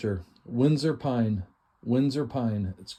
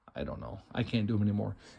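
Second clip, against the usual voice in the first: usual speaking voice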